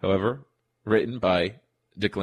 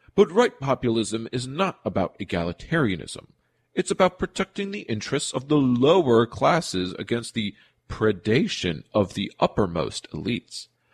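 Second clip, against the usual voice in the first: goofy, funny, mocking put-on voice; 2 semitones higher than usual. Quoting a claim from an American Conservative essay, in a mock funny voice. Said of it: "Back to Mr. Funny Voice".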